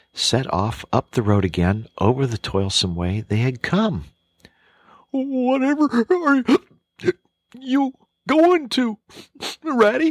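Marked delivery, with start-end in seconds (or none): 5.1-10.1 very high, tearful, alarmed outcry. Narrating the Mole crying out to Ratty as he sets off, tearful and alarmed. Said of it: "cried the tearful Mole, looking up in alarm".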